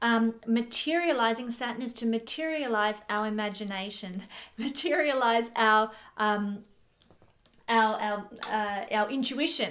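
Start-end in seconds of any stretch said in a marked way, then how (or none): 4.6-5.9 giggling, chuckling through the words. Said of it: "I keep laughing".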